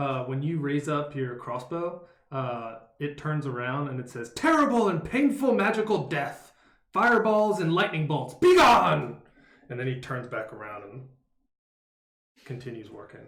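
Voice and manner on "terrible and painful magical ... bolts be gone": booming, loud, high shout. Voicing a puppet that turns and shouts at a raised crossbow: puppet shouting in Hallister's voice. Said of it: "when that shouts, uh, both of you recognize it as Hallister's voice".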